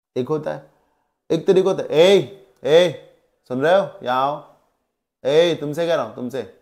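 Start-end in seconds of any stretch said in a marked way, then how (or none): 1.9-6.4 rude, bossy, imperious tone. Demonstrating an imperious way of calling a waiter over, imperious tone. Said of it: "ये imperious nature में आता है".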